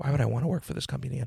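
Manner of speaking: put-on muttering under breath. Retelling a reply to a warning about never working there again: imitating a mutter under breath. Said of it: "I just muttered under my breath".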